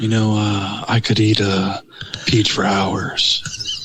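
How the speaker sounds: swooping celebrity voice, pitch swinging all over. Asked by the others to do a voice, answering: Nicolas Cage voice. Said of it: "unless you do a Nicolas Cage voice".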